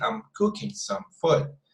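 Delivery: "I'm" given weight, smooth finish after. Demonstrating a more natural way to say a sentence, emphasizing two sounds. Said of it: "we are emphasizing on these two sounds".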